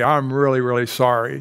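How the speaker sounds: plain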